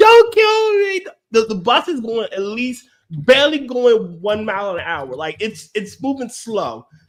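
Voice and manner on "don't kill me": very high, loud scream of panic. Retelling a video of a woman clinging to a bus, imitating her screaming. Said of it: "she's screaming".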